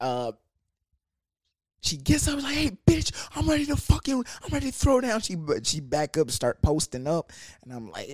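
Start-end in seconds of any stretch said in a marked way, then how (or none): 2.5-5.2 very high, brash, spoiling-for-a-fight voice. Retelling how a drunk girl got up to fight: imitating someone ready to fight. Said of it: "She was ready to wild out".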